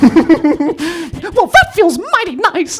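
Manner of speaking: very high pitch, slow and swooping. Retelling doing bits during intimacy with girlfriend: Mickey Mouse voice. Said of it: "a little Mickey Mouse".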